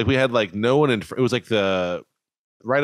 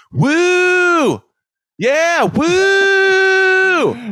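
put-on forced cheer, much higher, louder, slower; 6 dB louder than usual. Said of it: "like you're mustering up the enthusiasm".

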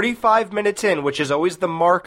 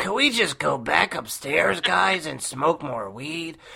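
sluggish stoner-style voice; 5 dB quieter than usual. Retelling how someone talked, channeling Cheech Marin: Cheech Marin voice. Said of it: "He was doing the Cheech Marin voice. He was like".

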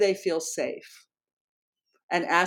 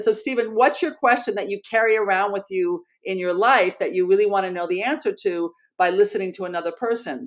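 ordinary talk

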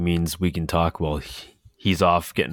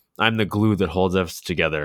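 normal talking voice

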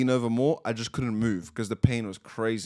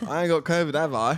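jokey, pitched-up put-on Essex accent; 5 semitones higher than usual. Joking about being sick to the other speaker, in a put-on Essex accent. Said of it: "Why did you turn so Essex?".

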